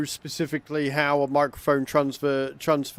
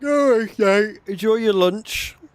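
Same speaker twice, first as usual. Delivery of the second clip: spoken through a yawn, very slow and drawn out; 7 semitones higher, 5 dB louder than usual. Speaker signing off before lunch, yawning while speaking. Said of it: "Sorry for yawning like that".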